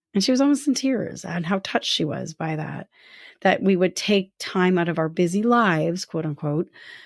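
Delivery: ordinary talk, nothing marked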